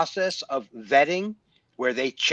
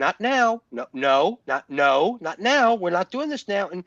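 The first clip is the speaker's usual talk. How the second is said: mock firm tone, higher; 4 semitones higher than usual. Retelling how he stops her horror show: imitating him refusing her. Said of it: "he'll be like".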